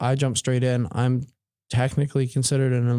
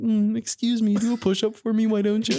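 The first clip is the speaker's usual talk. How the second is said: strange, high, odd put-on voice; 10 semitones higher than usual. Imagining asking the biggest, scariest-looking guy to do a push-up, unexpected put-on voice. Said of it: "I don't know where that voice came out of".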